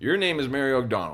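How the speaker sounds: play-acted, calm, plainly stated, matter-of-fact menace. Retelling a scene where a character threatens a mother: imitating a quiet threat. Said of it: "doesn't even say it, like, how honest, like, aggressive".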